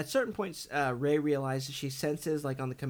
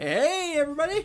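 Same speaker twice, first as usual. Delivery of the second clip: put-on very high, loud holler like a happy drunk guy; 14 semitones higher, 6 dB louder than usual. Imitating the little Muppet droid slicer's catchphrase: Babu Frick voice like a drunk guy. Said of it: "He's like a drunk guy".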